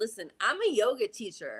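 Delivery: acted-out annoyed, exasperated, irritated tone, swooping. Retelling a reply to a lady in yoga class: imitating own irritated reply. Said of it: "I kind of got irritated".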